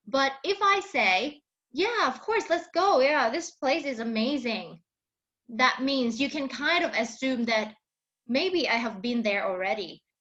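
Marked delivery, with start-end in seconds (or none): 1.8-4.8 keen, positive, upbeat, eager. Showing how tone reveals liking a place, in a positive, enthusiastic tone. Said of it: "my tone and my words are showing you that I'm I might like this place".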